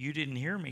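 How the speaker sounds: ordinary talk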